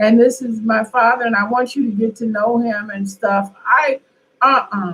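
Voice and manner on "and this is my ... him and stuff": normal talking voice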